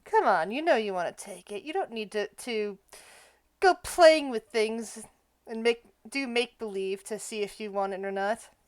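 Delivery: soft half-whisper with no voice behind it. The game master voices a woman half-whispering to another character, in a half-whisper. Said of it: "And she whispers at Jasper".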